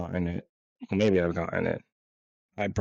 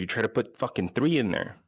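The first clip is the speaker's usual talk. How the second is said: ordinary talk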